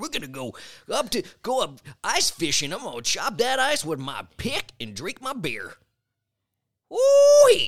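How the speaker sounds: loud, whooping high character voice, big swooping pitch. Doing a character bit for another speaker: Wisconsin prospector voice. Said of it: "made him a whole character".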